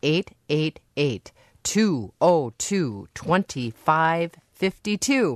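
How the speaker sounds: very slow, unhurried. A public radio host gives the pledge phone number, very slow. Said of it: "or I'll say this slowly".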